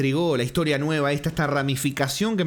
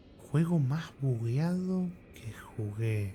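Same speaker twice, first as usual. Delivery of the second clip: thoughtful, much quieter sighing; 4 semitones lower, 9 dB quieter than usual. Repeating a question put to them, then sighing, thinking it over.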